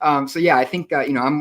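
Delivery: high, loud talking through laughter.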